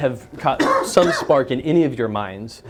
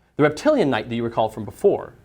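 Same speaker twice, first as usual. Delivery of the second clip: usual speaking voice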